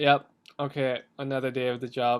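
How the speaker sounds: mock bored, indifferent tone. Describing a cop in a scene acting as if nothing is happening, imitating bored indifference. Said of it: "He's just like".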